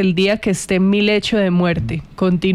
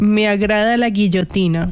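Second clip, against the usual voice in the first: usual speaking voice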